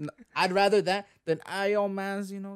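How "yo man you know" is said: Toronto man's accent. Comparing accents in conversation, demonstrating a Toronto man's accent. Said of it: "a Toronto man's accent".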